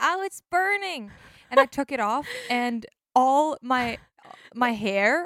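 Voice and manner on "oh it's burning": mock, very high, sudden screamed cry. Recounting sitting by the fire until it was too much, retelling a scream. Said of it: "So I just screamed out".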